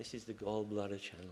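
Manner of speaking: ordinary talk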